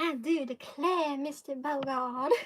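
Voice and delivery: put-on, genteel Southern belle accent. Talking about one's own Kentucky accent, then showing it off: Southern belle voice. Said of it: "Southern Belle voice".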